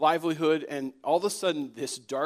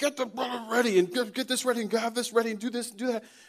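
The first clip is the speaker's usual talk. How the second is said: string of high-pitched, yelled lines; 8 semitones higher than usual. Retelling how she yelled orders into a walkie-talkie, retelling yelled commands. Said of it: "she's yelling commands into the walkie-talkie".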